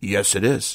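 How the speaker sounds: growling bear voice. Telling a story, the bear answers the wolf's question, growling bear voice. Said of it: "Bear growled again".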